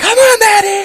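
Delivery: very high, loud, screaming cheer.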